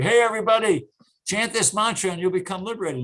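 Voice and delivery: loud, high-pitched shout.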